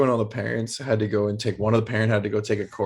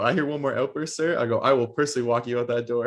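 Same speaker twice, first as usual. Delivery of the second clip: normal talking voice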